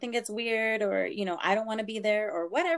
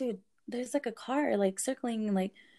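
ordinary delivery

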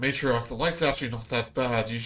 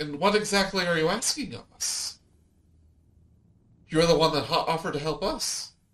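startled, taken aback, pitched-up voice; 5 semitones higher than usual. Voicing a startled queen answering the party's demand: startled queen character voice. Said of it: "she looks a little, like, startled".

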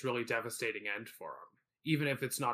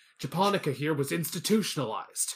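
put-on defensive, aggressive voice, higher and louder; 4 semitones higher, 5 dB louder than usual. Retelling a movie exchange: imitating Martin Short, defensive and aggressive. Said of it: "gets really defensive and aggressive and goes".

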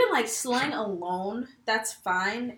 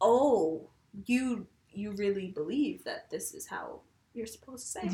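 usual speaking voice

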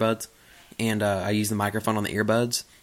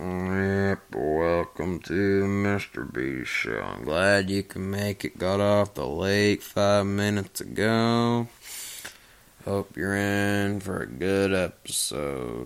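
drowsy, drained voice, much slower. Showing how a podcast intro sounds after a day on the lake, drowsy and drained. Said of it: "I'm drowsy, man. I sound drunk".

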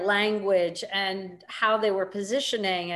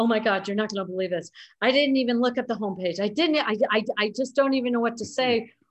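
mock stuttering, upset, flustered stammer; 2 semitones higher than usual. Retelling a colleague's upset phone call: imitating someone stuttering, upset. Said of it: "Tony is, like, stuttering. He's so upset".

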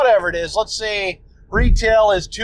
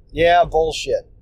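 ordinary talk

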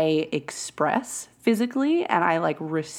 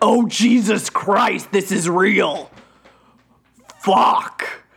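loud, demonic-sounding demon voice; 3 semitones higher, 6 dB louder than usual. Retelling her own past realization to others: demon voice. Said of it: "It's your demon voice".

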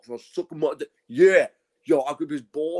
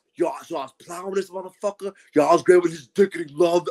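put-on angry, aggressive, hostile gangster-style voice.

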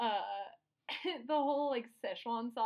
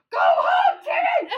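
mock screaming, higher-pitched and louder; 15 dB louder than usual. Imitating a parent at a sports game yelling at their child: imitating a screaming sports parent. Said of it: "monster screaming".

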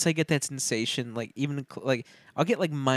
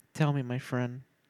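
reluctant, unwilling, quieter; 5 dB quieter than usual. Friend inviting a co-host to describe a bad panic attack, reluctant. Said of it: "why did that sound like reluctant?".

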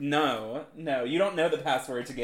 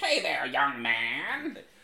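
very slow, lingering drawl with "man" stretched out. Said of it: "[name] saying it".

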